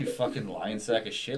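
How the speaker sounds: plain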